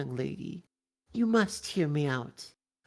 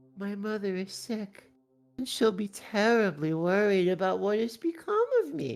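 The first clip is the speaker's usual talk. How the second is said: pitiful, saddest, soggy, wet little creature voice; 3 semitones higher than usual. A trapped mouse begs for its life, saddest, wettest little creature voice. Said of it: "I want this to sound like this the saddest, wettest little creature possible".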